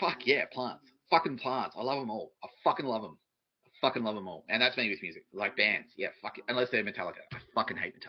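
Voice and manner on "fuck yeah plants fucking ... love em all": gushing, effusive, with free swearing. Acting out a bearded gardener's answer about his favorite plant: imitating Costa. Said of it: "He's like".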